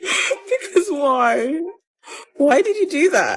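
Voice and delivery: high, tearful voice crying through words. Asking the person who ghosted the speaker why, crying. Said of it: "I'm actually crying".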